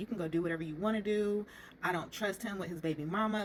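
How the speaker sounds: ordinary delivery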